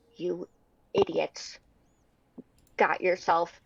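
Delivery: soft low voice. Voicing a character who steps close to Bard: lowered voice. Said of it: "she's gonna lower her voice".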